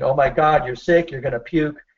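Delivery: ordinary delivery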